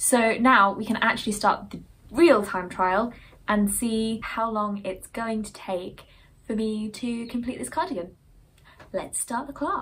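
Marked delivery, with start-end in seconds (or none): 8.9-9.8 soft, cheesy, really bad game-show host voice. Knitter starting a timed trial of making a cardigan: bad game show host voice. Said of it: "I sound like a really bad game show host".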